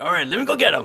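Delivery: high-pitched, whiny, complaining tone. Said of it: "Jimmy was whining back here like".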